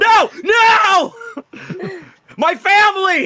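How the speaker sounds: tiny worm scream, very high, very loud, drawn out. Telling how you eat a worm in an apple, voicing it: screaming worm voice. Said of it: "he screams".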